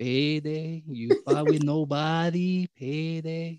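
put-on very slow, stretched-out taunting jeer with Mexican accent. Retelling how Canelo laughed at a challenger who called him out, mocking Canelo impression. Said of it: "He was like fully mocking him".

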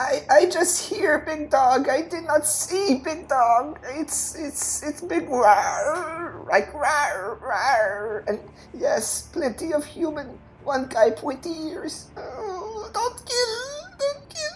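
scared, terrified goblin voice in broken words. In a role-play game, a surrendering goblin answers the party's questions; terrified pleading goblin. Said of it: "You see the goblin. He looks at his fear. He looks at you. He looks at the fear. He looks at you. And no! Please don't hurt the don't hurt [name]. Please don't hurt [name]. Don't hurt finger / And he".

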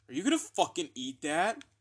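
irritated, grumpy, pissed-off, swooping voice. Retelling what they asked a friend one morning: imitating own grumpy self. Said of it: "I woke up one day so fucking grumpy".

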